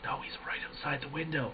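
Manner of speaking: put-on terrified whisper. Speaker recounting a tense Discord call, retelling a terrified whisper. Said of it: "We're whispering in Discord".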